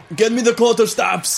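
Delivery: commanding shout, high and loud.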